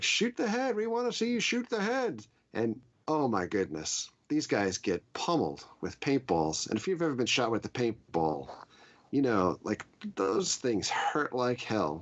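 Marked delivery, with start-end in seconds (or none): 0.0-2.2 put-on very high, screaming commander voice. Retelling what a commander on the bus yells at riders: imitating a commander screaming. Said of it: "screaming at you".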